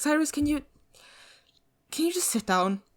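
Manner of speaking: a little irritated. A game master voices a character reacting to restless pacing, a little annoyed. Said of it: "gets a little bit like annoyed".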